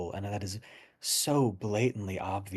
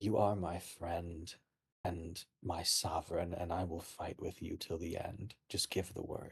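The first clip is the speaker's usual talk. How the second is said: close, soft, hushed half-whisper; 2 semitones lower, 6 dB quieter than usual. Voicing a character hugging a friend and sovereign, half-whispering in character. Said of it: "whispers in your ear".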